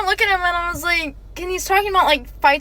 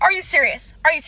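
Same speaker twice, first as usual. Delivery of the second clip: put-on angry voice. Retelling a date's reaction to a quick goodbye kiss: imitating an angry date. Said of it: "He gets so mad".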